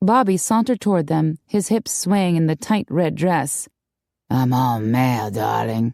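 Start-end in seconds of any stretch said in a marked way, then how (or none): 4.3-5.9 very low, slow, deep husky drawl. A man approaches two onlookers and speaks in a deep, husky voice. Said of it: "he said in a deep, husky voice".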